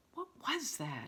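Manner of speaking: trembling, frightened, shaky high voice. Narrator reads a character hearing a sound behind her, in a shaky voice. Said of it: "she said in a shaky voice".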